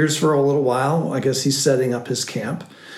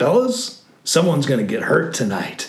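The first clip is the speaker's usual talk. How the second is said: hearty, jovial, good-humoured, lighthearted tone. Retelling what a man with a gun said to the group: imitating a jovial, grinning tone. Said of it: "with this kind of grin and maybe jovial attitude".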